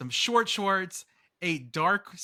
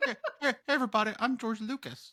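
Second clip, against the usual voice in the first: high, funny, silly character voice; 6 semitones higher than usual. Introducing the character as George Lucas in a Kermit-like voice. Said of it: "I'm George Lucas as Kermit and Mac Brown".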